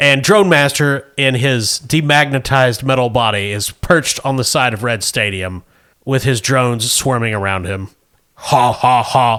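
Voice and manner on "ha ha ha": robotic, villainous laugh. The game narrator voices Drone Master perched on a stadium, Drone Master robot laugh. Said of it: "That's his robot voice".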